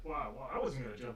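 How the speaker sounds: ordinary talk, nothing marked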